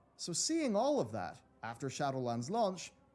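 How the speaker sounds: plain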